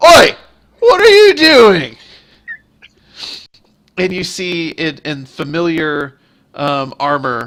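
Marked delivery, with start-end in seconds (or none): 0.0-2.0 appalled, startled, very loud, shrill alarmed yell. The game master voices a city guard catching the players; disgusted, alarmed shout. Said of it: "a very disgusted and alarmed voice go".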